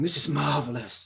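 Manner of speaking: loud, booming voice. Retelling a teacher's taped feedback on a lesson: big booming voice. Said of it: "this big booming voice is leaping out going".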